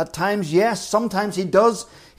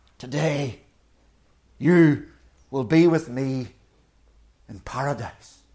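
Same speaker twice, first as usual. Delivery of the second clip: put-on hoarse croaking whisper, lower pitch; 4 semitones lower than usual. Retelling words spoken to a man on a cross, imitating a croaking whisper. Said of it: "In a voice reduced to a croaking whisper".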